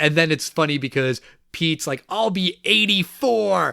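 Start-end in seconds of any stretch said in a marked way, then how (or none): 2.1-3.7 furious, outraged, indignant, high, rough voice. Retelling a movie scene, quoting Pete's line: furious Pete voice. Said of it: "And he's furious".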